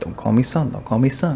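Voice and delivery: ordinary talk, nothing marked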